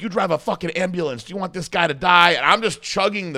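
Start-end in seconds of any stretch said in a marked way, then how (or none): 0.0-2.3 angry, arguing yell. Speaker retells a man yelling at an EMT during an argument, retelling a yell. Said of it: "he's like yelling at the guy".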